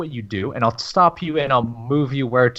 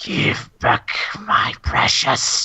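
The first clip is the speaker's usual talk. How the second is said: hissy whisper, echoing and distant; 2 semitones higher than usual. A voice speaks inside Kieran's head once more: echoey, hissy voice. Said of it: "this echoey, hissy uh, voice".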